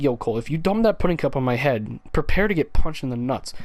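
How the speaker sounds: ordinary delivery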